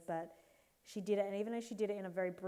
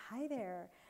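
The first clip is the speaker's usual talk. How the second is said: bright put-on American accent; 3 semitones higher, 3 dB quieter than usual. Retelling a brain snap and pretending to be somebody else, put-on American accent. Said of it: "started talking in an American accent".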